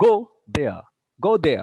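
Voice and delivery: go loud and rising, there falling. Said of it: ""go," rise intonation ... "there," falling intonation".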